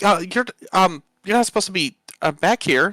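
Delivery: very high, slightly panicked, a little flustered, stumbling. A character pacing the hall finds the door ajar; panicking a little. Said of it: "you can tell she's like panicking a little bit".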